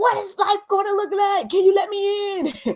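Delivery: very high, frustrated yell, cried upward.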